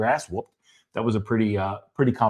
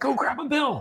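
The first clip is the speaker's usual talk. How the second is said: put-on, all-excited voice, pitched way up; 4 dB quieter than usual. Telling a childhood Christmas story, speaker quotes the aunt, imitating Aunt Marge's excitement. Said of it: "my Aunt Marge was all excited".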